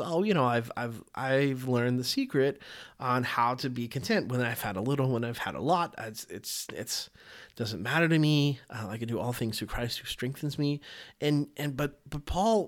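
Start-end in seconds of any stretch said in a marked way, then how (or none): none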